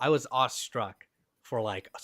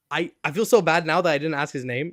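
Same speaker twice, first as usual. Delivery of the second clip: normal talking voice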